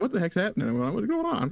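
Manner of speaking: mock baffled, confused, loud bewildered outburst. Joking about chaos at home: imitating a confused wife. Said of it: "my wife is just like".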